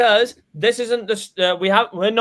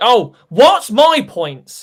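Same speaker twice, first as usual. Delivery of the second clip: loud, drawn-out mock whine. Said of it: "Liam just cares about the points".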